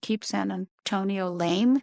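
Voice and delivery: ordinary talk, nothing marked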